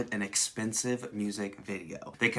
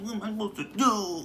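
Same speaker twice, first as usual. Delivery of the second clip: mocking, high, whiny rich kid voice. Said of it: "I could kinda hear the satirical tone".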